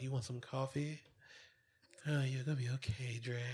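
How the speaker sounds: soft, sweet, flirtatious tone. Retelling how a woman offered Dre coffee, imitating her flirty tone. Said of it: "her tone of voice and everything".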